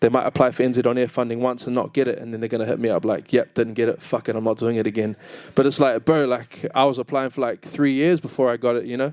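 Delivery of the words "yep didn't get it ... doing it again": plain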